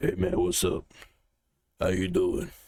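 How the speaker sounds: deep, low, rough, raspy voice. Recalling a former boss's phone greeting, imitating his low raspy voice. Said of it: "he had that that really low voice, that raspy".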